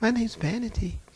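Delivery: mild, sweet and demure voice. Retelling a deliverance where the demon answered its name: imitating a sweet, demure voice. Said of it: "She sounded just as sweet and demure".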